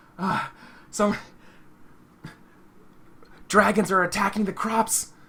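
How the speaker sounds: winded, very high, breathless panting cry. Voicing a farmer who bursts through the door with news: panting, out of breath. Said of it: "the sounds of, uh, humans panting".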